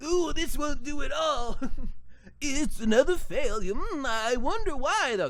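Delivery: put-on old man voice. Reading a character's dialogue aloud, in an old man voice. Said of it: "Read an old man voice".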